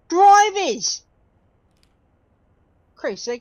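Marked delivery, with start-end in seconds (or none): 0.1-1.0 high-pitched, loud Australian accent. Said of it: "I almost sounded Australian then".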